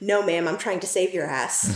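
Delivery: ordinary talk, nothing marked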